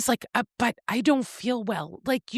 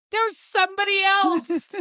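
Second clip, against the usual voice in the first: panicked voice, higher; 8 semitones higher than usual. Retelling a film scene, quoting Silas: imitating a panicked Silas. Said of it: "Silas immediately panics".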